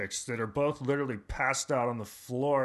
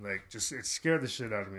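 normal talking voice

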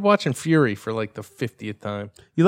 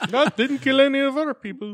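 put-on mock Russian accent; 9 semitones higher than usual. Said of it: "I don't even know what kind of accent that was".

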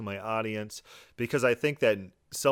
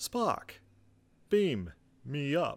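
halting, swooping delivery with long pauses; 4 semitones higher than usual. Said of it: "he thinks and he talks like William Shatner with pauses".

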